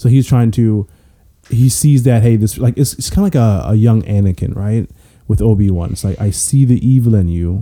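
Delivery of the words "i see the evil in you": unhurried British-sounding voice. Quoting a line from a movie trailer: put-on british voice. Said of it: "try to say it in, like, a British voice".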